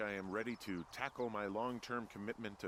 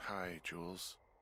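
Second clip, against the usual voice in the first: drowsy, tired, just-woken sleepy voice; 3 semitones lower than usual. Just woken to pick up the radio, greeting the caller in a tired voice. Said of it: "you sound tired".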